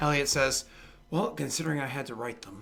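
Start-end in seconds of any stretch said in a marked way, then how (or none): 1.1-2.6 muttered aside under the breath. Game narrator voices a character's aside, muttered under his breath. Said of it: "he kind of says like under his breath".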